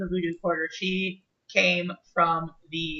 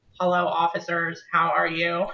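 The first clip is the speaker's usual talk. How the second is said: flat, slow, robotic voice-box drone. Voicing an officer who talks through a throat voice box: robotic voice box voice. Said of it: "it basically lets you talk, like, if you're a robot".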